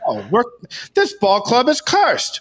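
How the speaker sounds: put-on high, swooping, sing-song old-timey ballplayer voice. Retelling a TikTok of a 1920s baseball player: imitating a 1920s baseball player. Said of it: "dressed up like an old nineteen twenties baseball player".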